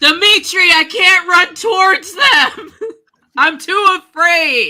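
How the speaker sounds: very high, loud scream from the top of the lungs. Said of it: "yelling at the top of my lungs".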